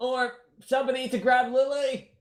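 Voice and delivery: very high, loud call. Opening the door and calling out for somebody down the hall: yelling. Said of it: "Sorry for yelling in your ear".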